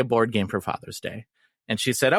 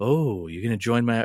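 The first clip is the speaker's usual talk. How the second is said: put-on sultry necromancer voice. Imitating the game's necromancer taunting the player: sultry Mariana voice. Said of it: "she has a very, like, sultry voice".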